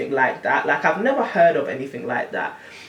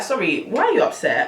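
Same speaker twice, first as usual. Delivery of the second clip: naive, innocent, guileless, clueless tone; 4 semitones higher than usual. Retelling her own question to her upset date: imitating her own naive tone. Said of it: "I said it in the most, uh, naive way".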